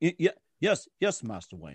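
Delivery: eager, swooping, stammering butler voice. Describing a sidekick character as a butler, speaker acts out his reply in a put-on butler voice. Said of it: "like a butler. And he goes".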